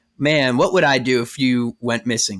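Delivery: plain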